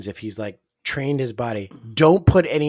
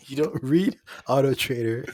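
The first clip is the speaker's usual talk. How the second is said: ordinary delivery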